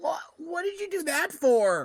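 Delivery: very high, pinched, held-nose nasal yelp. Voicing a town master who got hit by a door, holding his nose. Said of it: "He's holding his nose and goes".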